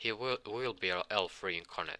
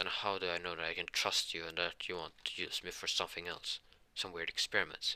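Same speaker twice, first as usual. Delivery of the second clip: plain reading voice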